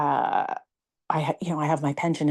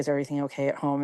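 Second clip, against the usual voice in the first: ordinary delivery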